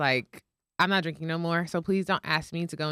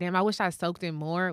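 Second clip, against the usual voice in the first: normal talking voice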